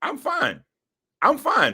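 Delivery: very high, soft, unsure, unconvincing voice. Insisting he's fine after being told he didn't sound confident, voice a little high. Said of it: "Your voice got a little high".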